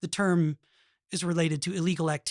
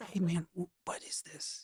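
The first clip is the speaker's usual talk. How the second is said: soft, hushed whisper. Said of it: "He's, like, whispering".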